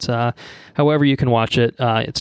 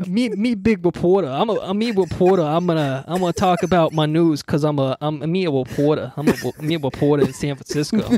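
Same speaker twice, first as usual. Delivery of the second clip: high, pitched-up, put-on twang; 5 semitones higher than usual. Riffing after a partner asks for more twang: Eddie Brock twang. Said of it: "little Eddie Brock twang".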